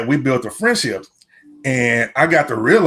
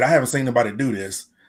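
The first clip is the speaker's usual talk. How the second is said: ordinary talk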